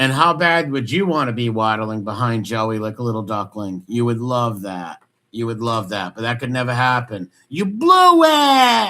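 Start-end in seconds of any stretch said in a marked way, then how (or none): 7.5-8.9 put-on angry yell, higher and louder. Imitating a movie scene of yelling at Stallone: Robert De Niro yelling. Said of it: "Robert De Niro on Copland when he's yelling at Stallone".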